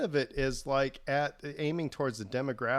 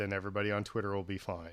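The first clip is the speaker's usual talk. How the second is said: usual speaking voice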